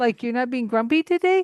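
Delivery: high, loud teasing surprise, incredulous.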